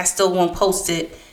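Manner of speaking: plain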